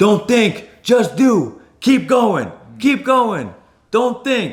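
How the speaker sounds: play-acted, shrill, very high screaming cheering yell. Retelling urging runners on during a marathon: imitating own screaming. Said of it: "I'm just screaming".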